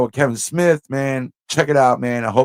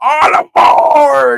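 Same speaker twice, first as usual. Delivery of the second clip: raised, rough-edged, high-pitched holler; 13 semitones higher, 8 dB louder than usual. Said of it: "he was like".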